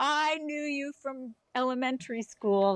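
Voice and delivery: high-pitched, mock yelled-out shout. Retelling how someone in the audience called out: imitating someone yelling out. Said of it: "somebody yelled out".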